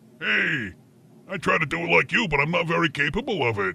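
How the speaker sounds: taunting, mocking, parroting voice. Mocking the other speaker by pretending to be him: mocking imitation of Roger. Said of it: "I was pretending to be you, and I was mocking".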